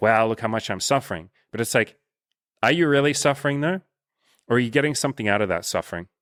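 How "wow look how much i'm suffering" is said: usual speaking voice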